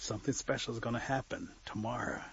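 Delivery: plain reading voice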